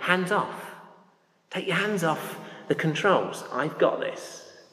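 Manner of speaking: put-on smooth, suave English accent. Retelling a flight instructor taking the controls from a novice, in a suave english accent. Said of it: "in this very suave sort of English accent".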